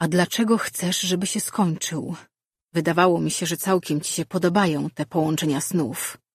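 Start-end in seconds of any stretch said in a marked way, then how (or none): none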